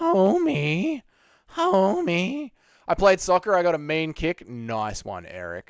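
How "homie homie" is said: high-pitched cartoon mom voice. Asked by another speaker for his best impression; Marge Simpson voice. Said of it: "can you do your best Marge Simpson impression".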